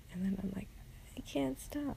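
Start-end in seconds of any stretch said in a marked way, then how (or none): 1.2-2.0 highest possible pitch, annoying voice. Retelling how he answers people telling him to shut up, high, annoying voice. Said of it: "That was about as high as I could go".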